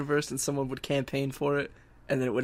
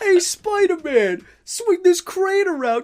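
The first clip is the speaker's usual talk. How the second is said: put-on New Yorker voice, higher and louder; 8 dB louder than usual. Imitating how civilians in the game sound: imitating a New Yorker civilian voice. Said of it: "they just sound like that one crane operator".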